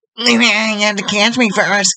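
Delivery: put-on very high-pitched cartoon boy voice. A fan griping about the DVR answers back in a second cartoon voice; Bobby Hill impression. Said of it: "my Hank Hill and Bobby impression".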